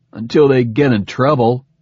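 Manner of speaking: scornful, sneering delivery. In a discussion with Sagan, [name] cuts in, sneering. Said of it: "[name] sneered".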